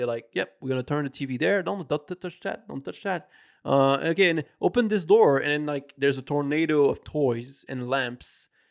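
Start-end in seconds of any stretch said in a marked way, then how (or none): 0.3-5.4 put-on unbothered, calm, casual, matter-of-fact nonchalance. Retelling how the investigators react to a missing child: imitating calm, casual investigators. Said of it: "they are so calm about it".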